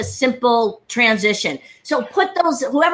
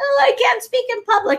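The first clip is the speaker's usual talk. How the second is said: tearful, weepy crying voice, very high pitch; 11 semitones higher than usual. Retelling what a woman said after coming up at an event: imitating someone crying. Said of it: "big crocodile tears, crying like".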